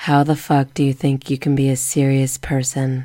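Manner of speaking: loud, flat, dead level emotionless monotone. Asked to hear their dubbed Sapphire, the speaker performs it: monotone Sapphire voice. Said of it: "Just very monotone".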